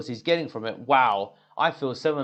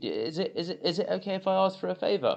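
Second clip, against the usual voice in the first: humble, sincere, earnest, pitched up; 6 semitones higher, 4 dB quieter than usual. Showing how he asks for an inside favor, humble, sincere request. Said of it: "there's a lot of sincerity attached to my voice ... the way that I'm saying it is quite humble".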